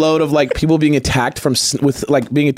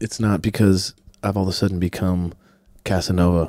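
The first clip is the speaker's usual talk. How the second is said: mostly lost voice, talking lower; 8 semitones lower, 5 dB quieter than usual. Explaining to listeners why they sound different today, voice lost, talking lower. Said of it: "I lost my voice".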